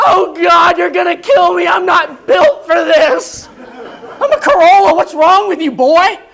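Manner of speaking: high, panicked, play-acted terrified shrieking car voice. Voicing a little Corolla pushed too fast, screaming in panic. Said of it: "It is screaming like a Ferrari".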